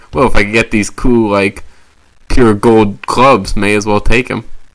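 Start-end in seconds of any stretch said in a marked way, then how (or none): none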